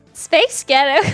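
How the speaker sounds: put-on American accent. Saying a phrase on request: American accent. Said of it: "I can hear it".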